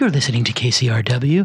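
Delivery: put-on public radio announcer style voice. Welcoming listeners back to the podcast after an ad break, in an NPR voice. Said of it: "I'm using my N P R voice".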